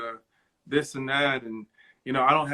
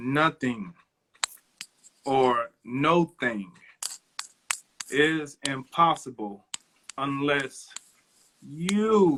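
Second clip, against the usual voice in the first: very slow, halting, each word emphasized. Asked for a word of inspiration, giving it to listeners very slow. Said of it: "I'll say this very slow".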